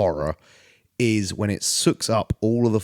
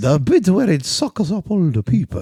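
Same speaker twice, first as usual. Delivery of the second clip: put-on Italian accent, very high-pitched; 9 semitones higher, 4 dB louder than usual. Discussing the monster in the film Nope, slipping into an Italian pasta-man accent. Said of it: "I'm turning into like an Italian pasta man".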